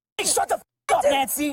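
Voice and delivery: very high-pitched angry shouting. Telling a drunk driver to be quiet: yelling. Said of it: "when you make the nice cop have to start yelling".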